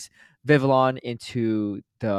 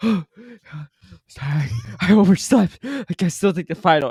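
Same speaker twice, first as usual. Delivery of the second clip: loud, panting, gasping, out of breath; 7 semitones higher, 5 dB louder than usual. Retelling a late classmate's apology to the professor, imitating someone panting. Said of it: "panting, sweating".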